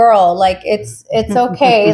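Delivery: ordinary delivery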